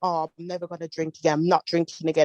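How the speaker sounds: ordinary delivery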